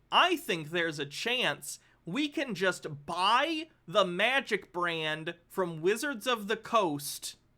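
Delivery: very slow, loud reading-out delivery. Reading a message aloud so everyone can hear it, reading very slowly. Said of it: "I'm going to read this real slow".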